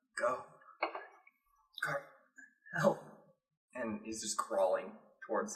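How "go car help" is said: barely voiced whisper under the breath. Voicing a character crawling towards a silhouette: whispering under his breath. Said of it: "whispering under his breath".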